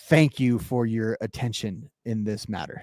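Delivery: soft, talking-down, condescending tone. Demonstrating the sign-off line of a boss's email, condescending boss-email tone. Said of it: "you can hear the condescending tone".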